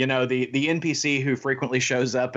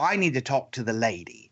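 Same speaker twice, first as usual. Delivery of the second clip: put-on British accent. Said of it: "this woman with a British accent goes".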